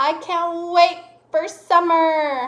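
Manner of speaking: eager, excited, slow rising upward lilt. Punctuation exercise example sentence, said excited with the voice going up. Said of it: "my voice went up, like kind of like I'm excited".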